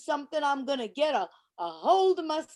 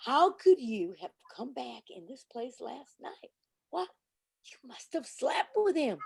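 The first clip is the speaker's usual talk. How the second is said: quiet, soft speaking kept low; 3 semitones lower, 3 dB quieter than usual. Repeating a question to Stella after being told to stop yelling: quietly. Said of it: "I will repeat the question quietly now".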